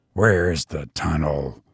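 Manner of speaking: distrustful, suspicious whisper. Just outside the castle past midnight, the brigand asks his guide, in a distrustful whisper. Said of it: "he asked in a somewhat distrustful whisper".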